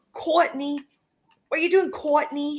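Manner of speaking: put-on Boston accent, played for laughs. Imitating a store manager saying a name as a joke: imitating Gail's joke Boston accent. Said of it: "she says it in, like, a Boston accent".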